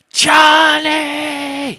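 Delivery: very high, drawn-out, top-of-lungs scream. Recounting being sent out to a motel parking lot to find Johnny, retelling a scream. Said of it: "I screamed at the top of my lungs".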